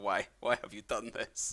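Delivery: sad dog character voice. Voicing a sad, barking dog that looks at the player: voicing a sad dog. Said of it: "looks at you being like".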